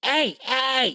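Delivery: high fantasy goblin voice. Speaker, talking about Pathfinder goblins, shows their usual goblin voice: goblin voice. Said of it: "It's usually my goblin voice".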